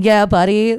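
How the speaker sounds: put-on yelling voice. Retelling what a contestant on the show kept yelling: imitating someone yelling. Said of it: "this one dude who kept yelling".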